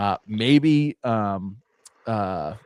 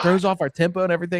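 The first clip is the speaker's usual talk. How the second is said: put-on complaining tone; 8 semitones higher than usual. Retelling what a man said in his end-game interview, mock complaining. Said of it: "Zach Taylor was complaining about it".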